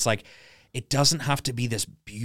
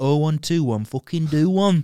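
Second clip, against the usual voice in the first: broad, drawn-out Manchester accent. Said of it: "Can you do a Manchester accent?".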